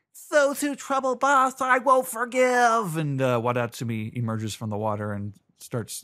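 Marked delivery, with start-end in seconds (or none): 0.3-2.9 booming, high, squeaky voice. Recapping a scene as a giant face emerges from the water, booming squeaky Wadatsumi voice. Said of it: "a booming, high-pitched, squeaky voice".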